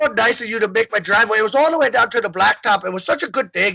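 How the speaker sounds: put-on friendly, neighbourly Irish brogue. Reading a neighbor's text messages aloud, in a put-on Irish brogue. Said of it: "so I read his text messages in Irish".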